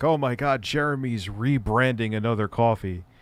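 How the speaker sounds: normal talking voice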